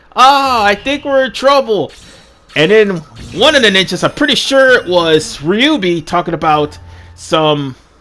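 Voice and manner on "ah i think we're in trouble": acted dry expressionless sarcasm, slightly raised pitch. Retelling a moment when the ninjas were panicking, mimicking Hikage's sarcastic line. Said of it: "just let out the sarcastic".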